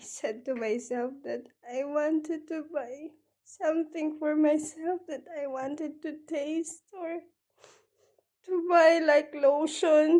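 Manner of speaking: tearful, crying voice. Recalling wishing to buy something for herself, crying while talking. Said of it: "I don't know why I'm crying".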